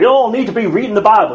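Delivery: loud Southern American drawl breaking through. Urging everyone to read the Bible, in a Southern American accent. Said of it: "You notice how I break out into a southern accent when I do that".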